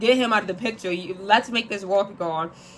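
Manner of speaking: usual speaking voice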